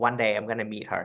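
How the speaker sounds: usual speaking voice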